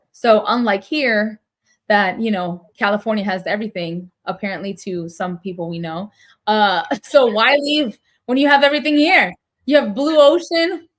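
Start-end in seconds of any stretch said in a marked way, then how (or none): 7.1-10.8 loud, raised sarcastic boasting with mock envy. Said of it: "I'm being sarcastic".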